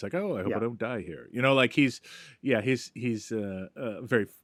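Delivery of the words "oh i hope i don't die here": quiet, aloof murmur, coolly unbothered. Showing how a film comedian delivers his asides: quiet aloof Bob Hope delivery. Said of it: "quietly points out something in a very sort of aloof voice".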